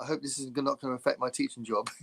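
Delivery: casual, low-key, understated throwaway aside. Retelling a biker's line from a film: imitating a quiet line. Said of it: "he quietly goes".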